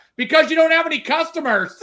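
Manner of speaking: very high, loud, shouted yell. Retelling a heckle from the crowd, imitating someone yelling back. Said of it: "somebody else yelled back".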